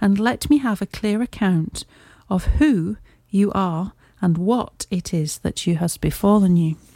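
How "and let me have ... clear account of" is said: ordinary delivery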